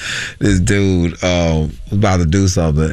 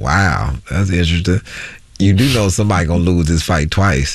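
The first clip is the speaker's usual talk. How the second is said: ordinary delivery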